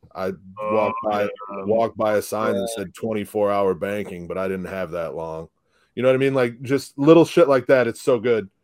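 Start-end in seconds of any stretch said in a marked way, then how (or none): 0.2-5.5 low, flat monotone. Imitating a comedian's joke delivery: Steven Wright monotone. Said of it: "that just, like, monotone".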